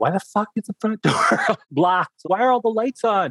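put-on, shrill, very high-pitched screaming. Retelling a mother's reaction to the locked doors: imitating mom screaming.

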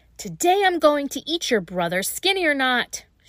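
witch voice losing temper, loud, high, furious. A narrator reads the witch speaking to the girl, angry, losing her temper. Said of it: "finally lost her temper".

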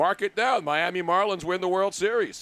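ordinary talk

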